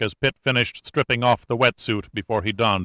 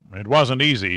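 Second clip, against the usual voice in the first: ordinary delivery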